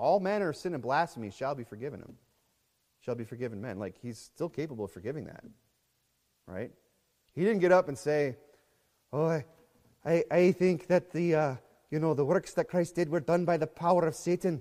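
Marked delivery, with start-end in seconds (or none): 9.1-14.6 put-on Irish accent, higher and slower. A speaker acts out what someone did not say, best Irish accent. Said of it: "that's my best Irish accent".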